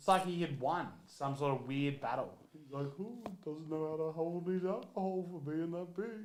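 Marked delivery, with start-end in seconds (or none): 3.0-6.3 soft, gentle cartoon dinosaur voice. Retelling what a big guy said after he threw up: Barney-like voice. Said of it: "Why are you talking like that?".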